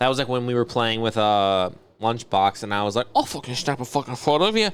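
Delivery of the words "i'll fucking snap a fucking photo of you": poor, fake British accent attempt. Retelling what they said while playing with a lunchbox, in a bad british accent. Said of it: "British, right?".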